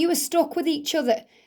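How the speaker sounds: plain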